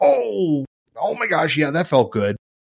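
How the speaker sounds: sarcastic, self-deprecating tone. Retelling hitting a toe on the wall: imitating own sarcastic remark. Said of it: "I'm being sarcastic".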